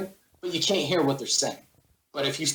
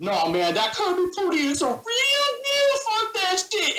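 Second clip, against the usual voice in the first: very high, swooping, rising squealing rant; 3 dB louder than usual. Speaker imitating an opponent's voice during a game, squealy crazy voice. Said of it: "squealy kind of voice comes out and goes".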